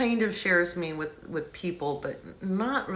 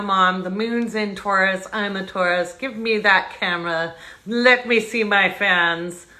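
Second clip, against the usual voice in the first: raised, fake English accent; 9 dB louder than usual. Voicing Malcolm, who popped up on the lap, to the fans, Malcolm's fake English accent. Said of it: "Malcolm has a fake English accent today".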